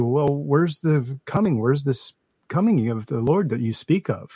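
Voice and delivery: ordinary talk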